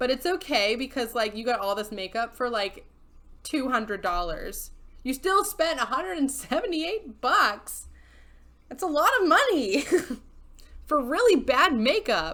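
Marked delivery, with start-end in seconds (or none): 5.0-12.3 loud, high-pitched, ranting yell. Talking to her audience, you guys; yelling. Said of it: "Sorry, I'm yelling".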